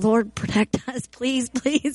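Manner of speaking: acted muttering under breath. Retelling what he prayed at the time, retelling praying under breath. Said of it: "praying under my breath".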